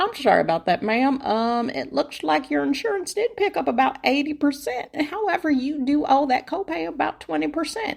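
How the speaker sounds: friendly put-on country accent. Retelling what a nice woman told her, the speaker gives her a country accent. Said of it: "I don't know why I'm giving her a country accent".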